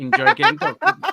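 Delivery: slow, high, loud gloating taunt.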